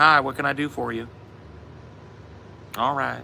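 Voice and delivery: high-pitched, twangy North Shore Pontchartrain accent. Demonstrating how people on the North Shore of Pontchartrain talk: twangy North Shore Pontchartrain accent. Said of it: "people talk like this".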